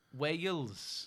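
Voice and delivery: attempted Welsh accent. Trying an accent when asked: put-on welsh accent. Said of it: "Welsh. Go on".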